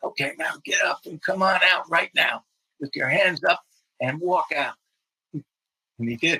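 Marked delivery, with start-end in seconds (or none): 0.0-4.7 high-pitched, loud yelled voice. Retelling how you ordered a man out, a negotiator beside you: retelling a yell. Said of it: "I yelled".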